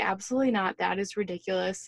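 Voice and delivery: normal talking voice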